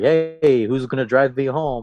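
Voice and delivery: mock-joking, playful, jokey tone. Remembering long bus rides to training, speaking to all the boys, retelling a joking ask. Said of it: "I kind of jokingly said to all the boys".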